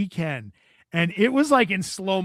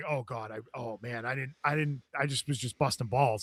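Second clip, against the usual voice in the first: put-on very low, shaken, stumbling, rattled words; 6 semitones lower, 9 dB quieter than usual. Speaker retells the reply of a man being screamed at by another, imitating someone rattled. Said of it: "Zoe is legitimately rattled".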